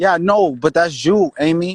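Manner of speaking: loud, heated outburst, letting it out.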